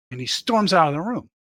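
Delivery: ordinary delivery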